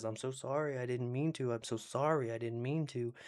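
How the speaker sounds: soft, sheepish, hangdog voice, put on. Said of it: "like a dog in trouble".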